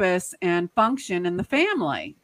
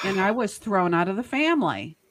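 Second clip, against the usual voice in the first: ordinary talk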